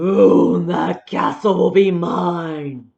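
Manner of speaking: very loud, slow, booming, vicious villain dragon voice. Showing how to read a dragon's line: mean, vicious dragon voice. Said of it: "How would he say that?".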